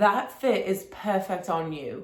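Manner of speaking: slow, terrible put-on British accent. Retelling what the guy behind the counter said: terrible British accent. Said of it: "That was a really terrible British accent".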